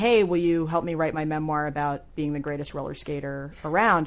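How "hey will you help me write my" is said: ordinary delivery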